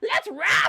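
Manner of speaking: very high, shrill goblin character voice. Voicing a goblin who shouts a line before being shot: voicing the goblin. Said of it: "and he went".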